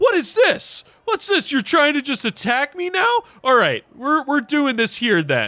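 sudden, very high, furious angry cry. A game master voices a man a player has just crashed into: crying out. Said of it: "suddenly he just cries out".

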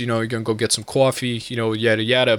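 casual, everyday New York accent. Describing how most people in New York talk, New York accent. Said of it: "most of the people in New York, they talk like this".

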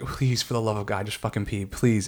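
acted panicked begging voice. Recounting being unable to pee into a cup: retelling a panicked plea. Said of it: "I'm just panicking".

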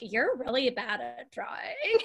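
put-on sing-song LA Valley girl voice. Retelling what a woman said to her: la valley girl voice. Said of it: "Like an LA Valley girl".

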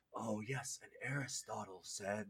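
very low, hushed, cheesy voice kept deep. Retelling how Shaq quotes Aristotle in a film: imitating Shaq's cheesy voice. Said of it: "trying to, like, do the voice like that".

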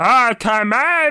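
high pitch held the whole way. Explaining how Muppet voices work, then trying one; Fozzie Bear impression. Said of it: "a Fozzie impression is you're just always in that up thing".

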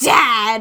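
acted, loud, accusatory, punched stress on the word dad. Imitating her calling him Dad when angry at Snake, mock-accusatory "Dad". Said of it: "it is really accusatory tone".

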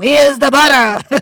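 acted-out, very high, cranky holler. Describing how you sound when hungry and angry, imitating a hangry holler. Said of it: "you get to like hollering like".

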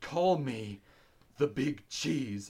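mock angry, furious outburst. Retelling a film character snapping at a scientist, mock-angry. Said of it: "he gets super mad at one".

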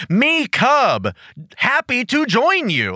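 very slow, drawn-out, high, dopey dim-witted voice. Retelling Cub's reply when introduced to Questar, speaking like an idiot. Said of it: "just speaking like an idiot".

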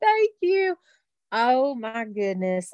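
near tears with a swooping voice. Starting to share in a meeting, almost in tears. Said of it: "almost in tears".

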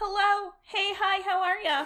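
very high-pitched customer-service voice. Guest greeting the others right after introductions, in a customer service voice. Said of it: "That is your customer service voice coming out".

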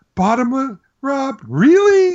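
very high, shrill, swooping, appalled, disgusted disbelief. Retelling his reaction when Rob rolled a bottomless pit trap, mock disgust and disbelief. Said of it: "the disgust and disbelief in his voice".

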